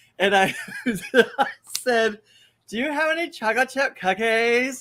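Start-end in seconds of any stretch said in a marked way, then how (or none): 2.7-4.8 put-on valley girl accent, higher. Retelling asking friends for cookies, speaker repeats it in a valley girl accent. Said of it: "He became a Valley girl".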